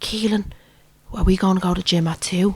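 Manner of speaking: hushed half-whisper. Retelling a phone call, imitating Jake half-whispering. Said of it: "I hear him whispering".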